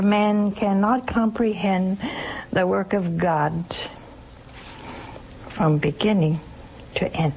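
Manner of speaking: ordinary talk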